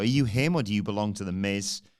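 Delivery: ordinary delivery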